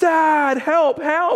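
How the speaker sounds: very high, loud, freaked-out scream. Father retelling finding his daughter hanging from a tree, imitating daughter screaming for help. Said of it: "she's screaming dad dad".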